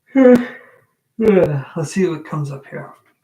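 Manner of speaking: loud, very slow, words stretched by yawning. Starting an energy checkup for two people, speaking mid-yawn. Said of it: "Sorry I'm yawning".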